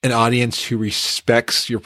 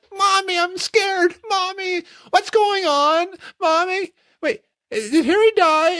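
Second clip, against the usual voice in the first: put-on very high, frightened, terrified little child's whimper. Retelling a kid behind them at the movie: imitating a terrified kid. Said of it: "a kid behind us who was terrified".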